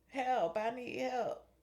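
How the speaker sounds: put-on very slow, high, drawn-out drunken crying out. Retelling how a woman at the door cried out: imitating someone screaming for help. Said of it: "Somebody was screaming to you for help".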